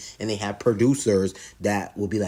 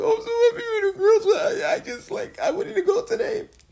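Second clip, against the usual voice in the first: play-acted, very high, tearful sobbing breakdown; 4 dB louder than usual. Retelling a scene where someone broke down in tears: imitating someone crying. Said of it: "Drea was breaking down in tears".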